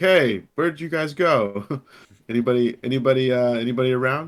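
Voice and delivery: calling out loudly. Voicing his character in the game, who calls to the others: shouting back. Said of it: "he kind of shouts back".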